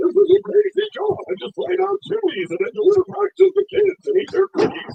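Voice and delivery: laughing voice pushed up high and loud. Showing how to do celebrity voices, the speaker demonstrates a Seth Rogen impression. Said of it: "take Santa Claus's laugh".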